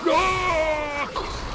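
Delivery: loud, high, gleeful shout.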